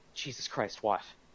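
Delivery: breathy, hushed, whispered grumble under the breath. Retelling own reaction when the woman walked in: imitating own muttering. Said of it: "I even muttered".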